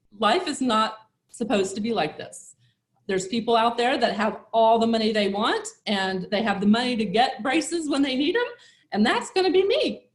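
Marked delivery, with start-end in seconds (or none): none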